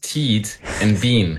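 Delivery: put-on New Zealand accent. Asked by the host how their names sound, a guest answers in a Kiwi accent. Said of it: "give me your impression of what your names sound like in a Kiwi accent".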